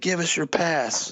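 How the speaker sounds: high, shouted yelling. Retelling park security demanding a pass: imitating someone yelling. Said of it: "they're yelling at me, man, like, full stop yelling".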